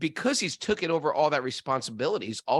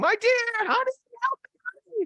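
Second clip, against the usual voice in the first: very high, pleading woman's voice, crying out. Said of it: "the wife was like".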